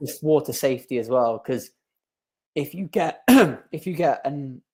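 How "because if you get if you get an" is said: voice giving out mid-phrase, halting. Urging parents to teach their kids water safety: voice cutting out. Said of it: "oh sorry, I lost my voice there".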